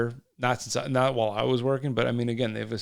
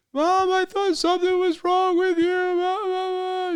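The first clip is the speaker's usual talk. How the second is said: put-on very high, loud, tearful crying little girl voice; 4 dB louder than usual. Retelling a young girl's words to her mother: imitating a crying girl. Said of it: "Little girl's screaming, crying".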